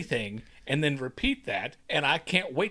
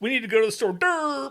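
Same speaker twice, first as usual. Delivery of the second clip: play-acted, high, teasing, mocking voice; 8 semitones higher, 4 dB louder than usual. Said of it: "Mike has a habit of".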